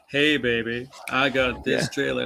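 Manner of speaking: laid-back, smooth, cool swaggering delivery. Retelling how the actor who voiced Kratos announced the trailer: imitating Kratos' voice actor, acting cool. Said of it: "the guy who did, um, Kratos' voice is like".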